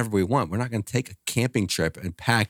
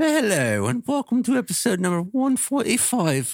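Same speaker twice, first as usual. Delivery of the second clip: put-on British accent, much higher pitch; 13 semitones higher than usual. Asked to try an accent while opening episode 145, in a put-on british accent. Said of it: "Nope, I went British".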